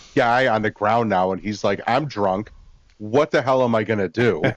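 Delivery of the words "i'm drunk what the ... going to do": mock, panic-stricken, blurted outburst. Retelling how a drunk character reacts on seeing a body: imitating a panicking character. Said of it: "full panic mode".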